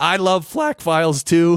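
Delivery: squeaky voice breaking upward. Podcast host siding with another podcaster, voice squeaking. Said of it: "my voice just squeaked".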